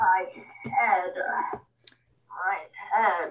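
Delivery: eerie, creepy, low, very drawn-out delivery. Trying out a scripted line before judging it, in a creepy voice. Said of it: "That sounded creepy".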